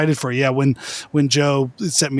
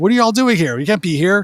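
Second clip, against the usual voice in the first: mock furious, high-pitched angry yell; 5 semitones higher, 4 dB louder than usual. Retelling the roommate coming home and finding them all there, retelling an angry yell. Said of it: "yells at all of us, like".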